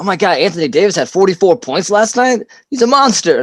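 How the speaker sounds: sudden high yell, climbing in pitch as it goes. Retelling reading stats at the bus stop: imitating own yelling. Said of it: "I'll yell".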